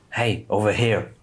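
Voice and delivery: voiced, hushed stage whisper. In a role-playing game, messaging the werewolf: half-whisper. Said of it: "I'm just gonna whisper".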